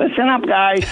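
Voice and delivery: squeaky, small, high little voice. Retelling the goalie speaking up to the team after a bad goal, squeaky little Fuhrzy voice. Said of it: "He's got that squeaky little voice of his".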